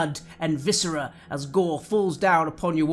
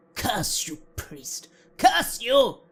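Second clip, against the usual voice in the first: high, annoyed, hostile, angry cursing; 6 semitones higher than usual. Narrator voicing distant voices cursing a priest, angry, annoyed voices. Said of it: "sounds of anger and annoyance".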